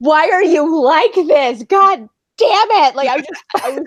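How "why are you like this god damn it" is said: high, drawn-out, fed-up, frustrated angry yell. Retelling yelling at an audiobook in the car: imitating screaming at the book. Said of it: "just screaming at the book".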